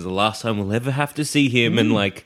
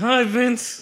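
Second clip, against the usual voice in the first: forced through clenched teeth, very high pitch; 13 semitones higher than usual. Narrator acting out greeting Vince Vaughn in an imagined encounter, through gritted teeth. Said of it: "Through gritted teeth".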